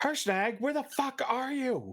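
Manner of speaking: very high, wild, swooping in-character calling-out yell. Shouting across a fight for a missing giant ally: yelling in character. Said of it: "although I am gonna yell".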